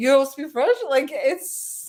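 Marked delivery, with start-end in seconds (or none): 0.0-0.8 put-on French accent. Retelling an interview where Rob pretends to speak French: imitating Rob's fake French accent. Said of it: "in a French accent, pretending he speaks French".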